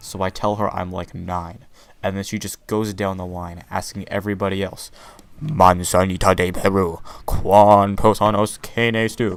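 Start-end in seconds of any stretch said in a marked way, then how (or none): 5.4-9.4 very loud, slow, drawn-out bellow. Retelling her going down the line asking everybody, retelling a very loud shout. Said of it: "still very loudly".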